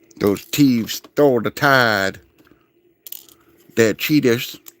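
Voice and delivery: botched, clumsy put-on Cajun accent. Repeating a line as Gambit, in a bad Cajun accent. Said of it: "I'm bad at uh, a Cajun accent".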